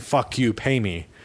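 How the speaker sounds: plain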